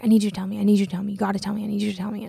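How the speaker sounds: mock insistent, freaky repetitive voice. Retelling how a man kept repeating himself to the speaker, imitating insistent, freaky repetition. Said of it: "kind of freaky when someone talks to you like that".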